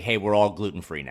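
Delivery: ordinary delivery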